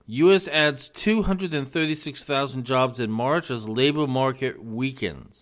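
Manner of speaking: plain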